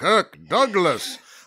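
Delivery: slow drawl, put-on impression voice.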